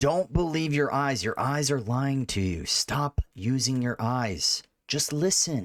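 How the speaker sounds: mock-calm, turtle-like put-on voice. Mocking people who deny the evidence, addressing viewers, calm turtle-like voice. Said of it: "Listen to my calm, turtle-like voice".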